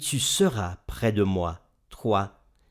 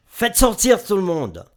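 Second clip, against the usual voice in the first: very shrill, high, loud outcry; 10 semitones higher, 7 dB louder than usual. Reading Genesis 45, Joseph, before those around him, cries out. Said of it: "Il s'écria".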